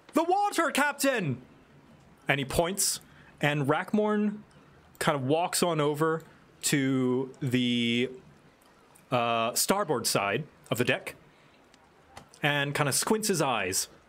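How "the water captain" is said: shrill, very high shout. Voicing the crow's nest lookout warning the captain about the water: shouting from the crow's nest. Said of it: "And the crow's nest shouts out".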